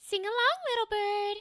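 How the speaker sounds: high nasal princess voice. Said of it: "It's right in the nasal".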